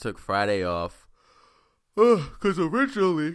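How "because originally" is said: words pushed through a huge, very loud, high-pitched yawn. Exhausted after a long weekend, telling listeners about taking Friday off, yawning while talking. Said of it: "sorry for yawning".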